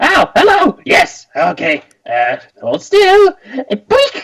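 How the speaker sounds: weird, very high, shrill squeaky voice. Voicing someone heard as the group walks past, in a shrill squeaky voice. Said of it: "this weird shrill squeaky voice".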